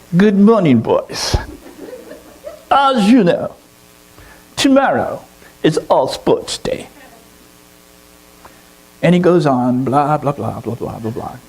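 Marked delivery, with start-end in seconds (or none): 0.1-6.8 put-on swooping, sing-song English professor accent, pitched up. Telling a story, the speaker voices the professor addressing the boys in an english accent. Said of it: "I'll try to do my best English accent".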